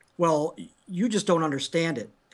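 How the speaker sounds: normal talking voice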